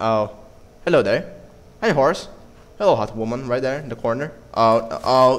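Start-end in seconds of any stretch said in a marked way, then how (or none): none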